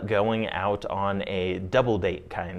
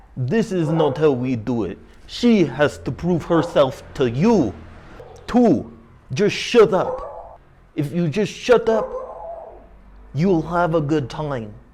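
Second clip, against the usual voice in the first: very poor, loud, put-on Eastern European accent; 8 semitones higher, 6 dB louder than usual. Retelling what a friend said after pulling him aside; very poor eastern european accent. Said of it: "this is my very poor Eastern European dialect".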